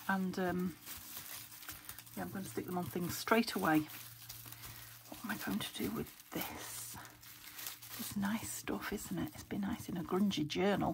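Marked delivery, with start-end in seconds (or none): 5.1-11.0 soft, hushed whisper. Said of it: "Sorry if I'm whispering".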